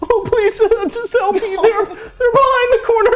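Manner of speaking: very high, very loud, sobbing tearful begging. Voicing a captive character begging guards for help: crying, pleading. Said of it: "He's still crying".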